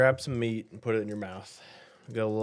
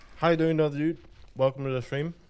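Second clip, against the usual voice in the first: talking with mouth full, much higher; 4 semitones higher than usual. A streamer welcomes a viewer to the stream, talking with mouth full. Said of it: "my mouth's full of meat".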